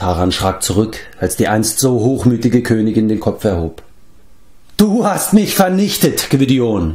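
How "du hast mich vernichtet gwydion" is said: high, furious scream. The once-proud queen turns on the man who destroyed her, screaming in fury. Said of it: "schrie sie, und ihre Augen blitzten vor Wut".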